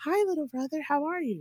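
gentle, high, composed tone. Retelling a game played with a little brother: Doctor Jekyll act. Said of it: "like, Doctor Jekyll and Hyde".

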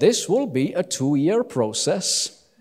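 slow, put-on Norwegian accent. Quoting the norwegian government as a friend told it, norwegian accent. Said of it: "That is my Norwegian accent".

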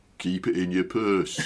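thick, broad Yorkshire accent and vowels. Asking an actor to try accents, the speaker demonstrates the phrase: broad Yorkshire accent. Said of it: "with a good broad Yorkshire accent".

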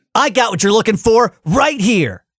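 high impatient sarcasm. Performing a movie line after being asked: impatient sarcastic Sonic voice. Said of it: "sarcastic Sonic".

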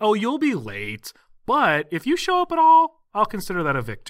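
playful sing-song teasing. Speaker recaps a scene, imitating a character saying it playfully. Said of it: "So she says playfully, like not mad or anything".

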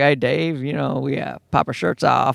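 rough-edged, creaky, rasping voice. Retelling a talk show impression line: Matthew McConaughey impression. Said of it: "he was doing the impression".

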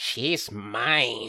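creepy, possessive voice with the word mine drawn out. The speaker voices the listener's weapon talking inside their mind, as a possessive sword's voice. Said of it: "a voice from your weapon going like".

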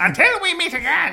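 very high-pitched, loud, scary villain voice. Signing off to listeners as the villain, in a scary Skeletor voice. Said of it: "he's so such a scary voice".

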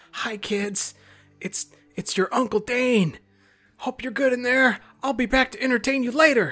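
exaggerated, loud stage whisper, pitched very high. Calling through a door to the kids inside: loud stage whisper. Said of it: "I whisper in a real loud stage whisper".

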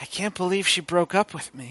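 soft, low mumble under the breath. Voicing a bleeding character who coughs up blood: muttering to himself. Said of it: "he mutters to himself".

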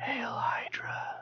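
breathy, soft whisper. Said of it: "when you whisper".

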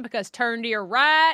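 called out loudly. Katie Rich names her favorite screen cop and quotes her: Edwina impression. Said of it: "I just want to applaud your impression of Edwina".

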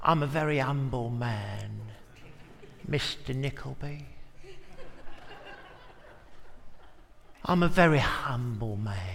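low, slow, swooping Cockney voice with drawled words. Working out how to play someone small, the speaker tries a Uriah Heep Cockney voice. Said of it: "I don't know why he sounds like a Cockney".

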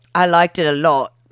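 silly put-on fake British accent. Agreeing that a movie sequence was clever: silly put-on British voice. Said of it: "No British voices".

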